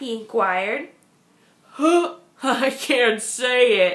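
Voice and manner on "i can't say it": giggly, very slow and drawn out. A narrator reads the rhinoceros answering Fluffy's question about his name, giggling. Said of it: "giggled the rhinoceros".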